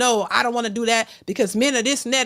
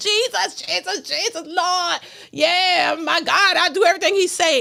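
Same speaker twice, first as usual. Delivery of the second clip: fervent, mild, half-crying pleading voice; 6 semitones higher than usual. Mocking hypocrites who run to god: imitating someone screaming prayers. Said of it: "praying and screaming".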